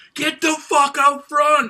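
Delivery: very loud, very high-pitched rousing shout. Describing a performer's stage presence, act out how he addresses the crowd, imitating someone yelling. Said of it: "He like yells at you like".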